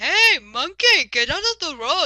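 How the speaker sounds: put-on Middle Eastern accent. Describing an imagined scene, speaker voices a guy yelling at a monkey: imitating a yelling Middle Eastern accent. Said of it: "a Middle Eastern sounding guy yelling".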